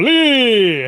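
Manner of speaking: booming, drawn-out, commanding tone. Casting a spell command at a troll: booming commanding shout. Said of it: "voice booms through the".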